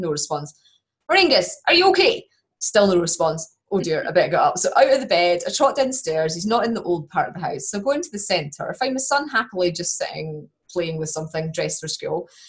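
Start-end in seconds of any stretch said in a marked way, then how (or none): 1.1-2.2 mock shrill, very high, loud calling shout. Retelling calling out to the husband downstairs: imitating own shout. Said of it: "so I'm shouting".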